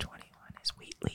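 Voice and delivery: whispering. Announcing a number after being asked to whisper: whispering. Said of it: "you whisper".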